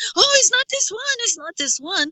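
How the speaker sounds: mild, high-pitched mock yell.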